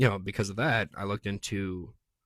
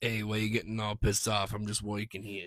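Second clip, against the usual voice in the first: put-on New York accent. Voicing a bee next to them, in a put-on New York accent. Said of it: "that accent's like my favorite one to do".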